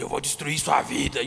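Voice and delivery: odd, strange voice, very low and soft. Retelling a threat heard early in youth leadership: imitating a strange deep voice. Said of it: "E uma voz esquisita, ... um grave diferente".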